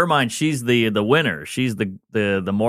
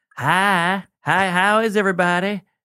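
put-on Southern drawl, laid on, high and slow; 8 semitones higher than usual. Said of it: "Southern's like".

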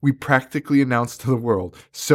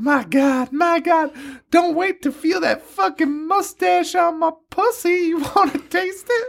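put-on very high, squeaky comic-book girl character voice. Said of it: "like, Harley Quinn's voice".

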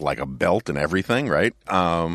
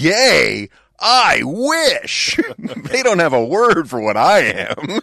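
mock, very high, very slow yell, one word stretched; 10 semitones higher, 6 dB louder than usual. Retelling the scene where Homer accuses him: imitating Troy McClure's yell. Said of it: "and he yells".

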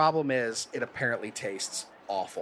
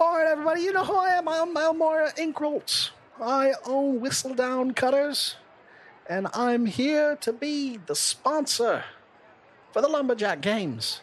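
very high, loud yell; 14 semitones higher than usual. A storyteller voices the sponsor announcing the lumberjack games, yelling to a crowd. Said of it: "You hear somebody yelling".

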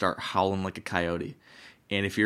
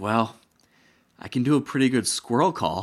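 dead serious, earnest, no joking; 4 semitones higher, 5 dB louder than usual. Retelling what Corey said in the tree stand: imitating Corey, dead serious. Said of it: "dead serious".

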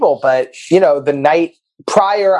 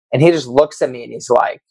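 normal talking voice

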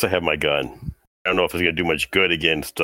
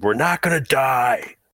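shrill, high, raised, far-up shout; 9 semitones higher than usual. Yelling in character at a panicking man who fell backwards: yelling at him. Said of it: "We yell at him".

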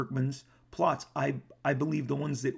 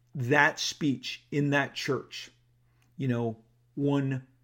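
ordinary talk

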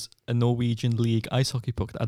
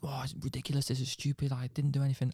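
put-on mouthing off, quieter; 8 dB quieter than usual. Speaker retells a hard man mouthing off to the speaker's dad, imitating someone mouthing off. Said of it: "He's like mouthing off to my dad".

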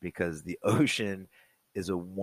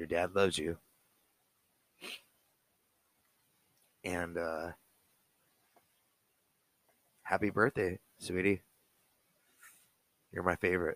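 emotional, voice choked up; 3 dB quieter than usual. A dad wishing his child a happy birthday, choked up. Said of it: "I'm getting choked up".

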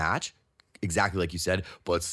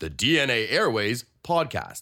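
radio announcer read, pitched higher; 4 semitones higher than usual. Showing the third announcer take of a podcast name: announcer voice. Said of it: "you wanted an announcer".

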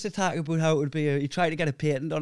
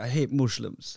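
put-on Dutch accent in English; 5 semitones lower than usual. Retelling what a racist man said, imitating his dutch accent. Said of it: "he had a Dutch accent".

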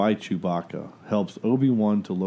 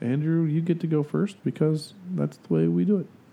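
high-pitched voice drifting upward, climbing and swooping; 7 semitones higher than usual. Telling Andrew he gets to go first; voice going high. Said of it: "my voice is getting the so. High".

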